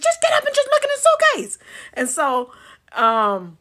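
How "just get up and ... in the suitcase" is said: very high, loud holler. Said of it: "and my sister".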